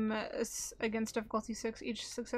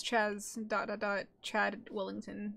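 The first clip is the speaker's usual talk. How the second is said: usual speaking voice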